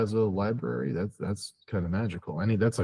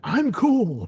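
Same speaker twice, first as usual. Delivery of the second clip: mock yelling, higher and louder; 7 dB louder than usual. Acting out a dad yelling at his kid: imitating a dad yelling. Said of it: "a dad yelling at their kid".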